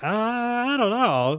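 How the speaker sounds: high, slow, hesitant, drawn-out unsure mumble.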